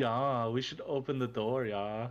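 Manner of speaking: put-on Austrian-accented voice. Retelling a game, quoting Tom's dwarf barbarian in an Austrian accent. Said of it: "decided to do like an Austrian accent".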